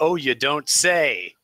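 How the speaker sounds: loud, high-pitched, sarcastic shouting. Yelling back in character to another character: in-character sarcastic yell. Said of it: "I yell back".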